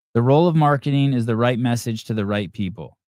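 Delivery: normal talking voice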